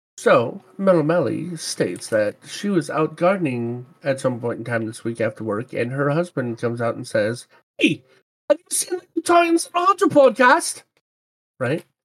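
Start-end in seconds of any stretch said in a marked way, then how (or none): 7.8-10.8 very high, failed Australian accent attempt, sounding English. Retelling a listener's story, quoting her husband: attempted australian accent. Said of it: "I was going for Australian, it came out as English".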